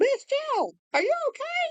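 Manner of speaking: play-acted very high, swooping, carrying yell. Retelling how a woman called out to the speaker a second time, retelling a yell.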